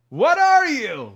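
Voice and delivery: shrill, very high-pitched, full-volume yell. Retelling what a stranger on the street said: imitating a man yelling. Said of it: "everything he yelled at me".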